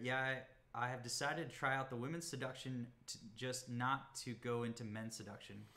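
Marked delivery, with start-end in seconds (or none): none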